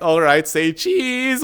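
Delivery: acted, slow, uncomfortable, ill-at-ease tone. A speaker retells their tour guide speaking while a scuffle breaks out behind, imitating a guide's uncomfortable tone. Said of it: "saying it in a more discomfort tone".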